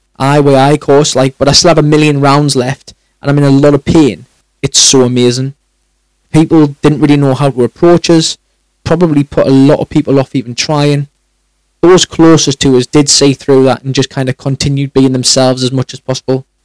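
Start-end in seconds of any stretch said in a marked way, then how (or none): none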